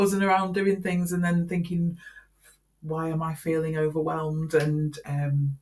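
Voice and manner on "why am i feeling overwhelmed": plain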